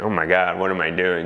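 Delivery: ordinary talk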